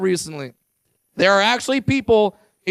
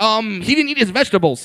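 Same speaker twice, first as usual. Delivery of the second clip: normal talking voice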